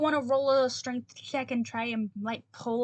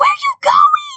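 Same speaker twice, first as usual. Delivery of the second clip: screeching monster scream, very high, shrill, very loud; 17 dB louder than usual. Describing the boss beetle screaming at the fleeing creatures: boss beetle screaming. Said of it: "just kind of screams at them".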